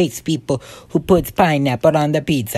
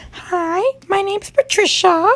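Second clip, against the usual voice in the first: put-on very high-pitched girly voice. Bragging about being a good voice actor, the speaker shows off a girl voice. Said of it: "I could be like a girl voice".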